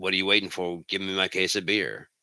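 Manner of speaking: put-on serious man's voice. Retelling how a man in a film looked at them and demanded beer: imitating a man's serious demand. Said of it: "looks at them with, like, a serious intent and goes".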